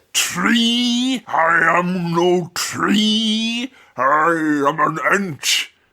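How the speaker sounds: playful, fun talking-tree creature voice. Joking about a talking tree, doing a Treebeard voice. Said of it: "that was just me doing a fun voice".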